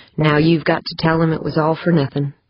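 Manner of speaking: plain reading voice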